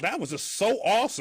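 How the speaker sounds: sarcastic voice. Showing how not to give criticism: sarcastic tone. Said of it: "don't just be, like, sar-, sarcastic".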